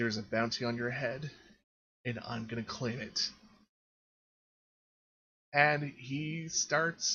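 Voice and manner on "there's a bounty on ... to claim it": menacing, threatening, growled voice. A game master voicing an enemy who looks Ray straight in the eyes: growling. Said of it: "looks Ray straight in the eyes and growls".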